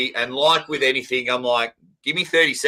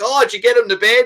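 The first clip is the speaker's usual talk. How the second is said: unrestrained, carrying natural voice, loud and pitched up; 9 semitones higher, 5 dB louder than usual. Retelling asking whether the girls are in bed: imitating own loud voice. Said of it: "My voice is just naturally louder".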